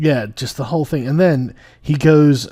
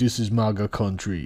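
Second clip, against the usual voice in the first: gentle put-on Nigerian accent; 4 semitones lower, 8 dB quieter than usual. Retelling a performance, speaker quotes a man's line imitating a nigerian accent. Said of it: "in a Nigerian accent".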